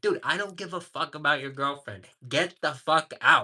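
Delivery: mock angry, heated and fed up. Recounting a confrontation with a guy, retelling an angry retort. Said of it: "I was like I was mad".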